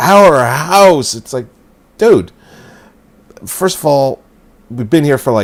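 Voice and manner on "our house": heavy, possessive stress leaning on our. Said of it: "the way she says it is like".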